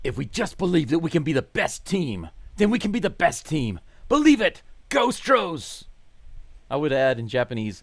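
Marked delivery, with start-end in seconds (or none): 0.0-5.9 loud, high anime hero voice. Reading a viewer's live chat comment aloud, in an anime voice. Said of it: "He says in his anime voice".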